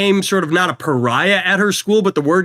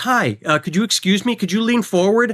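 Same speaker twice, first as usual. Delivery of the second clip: mock sweet, courteous, hesitant polite tone; 3 semitones higher than usual. Retelling how a girl asked to reach into a car: imitating a girl being polite. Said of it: "completely polite to us".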